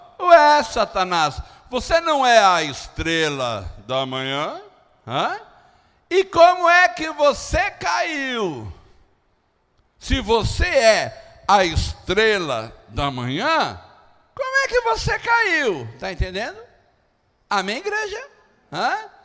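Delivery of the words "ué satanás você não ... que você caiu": mock-ironic, high, slow, drawn-out tone. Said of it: "É mais ou menos assim, ó".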